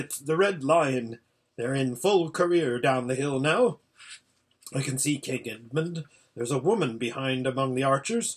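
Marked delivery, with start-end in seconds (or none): none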